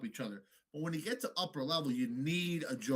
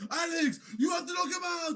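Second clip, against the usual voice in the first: mock screaming, much higher pitch, louder; 14 semitones higher, 5 dB louder than usual. Recounting a fight, imitating a fighter's corner screaming at him. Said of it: "they're fucking screaming at him".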